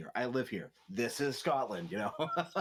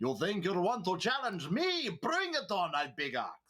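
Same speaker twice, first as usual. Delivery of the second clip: put-on Russian accent, spoken slowly; 7 semitones higher than usual. Showing the voice planned for a new Minotaur Paladin character: Russian accent. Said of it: "he's so gonna have a Russian accent".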